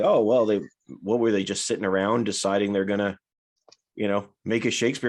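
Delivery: ordinary talk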